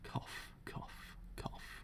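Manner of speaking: very soft whispered coughing, choking on the words.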